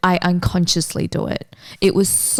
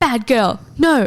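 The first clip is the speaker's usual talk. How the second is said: mock stern little scolding, like past yelling; 5 semitones higher than usual. Retelling scolding the dog after it ate the food: imitating own past yelling. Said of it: "I'm yelling at her".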